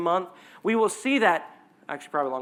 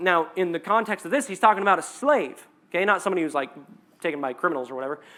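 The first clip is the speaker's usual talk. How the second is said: usual speaking voice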